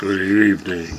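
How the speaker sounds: vampire-style count voice. Rehearsing a story scene, showing how the queen's greeting is done, Dracula voice. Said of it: "they do it in a Dracula kind of voice".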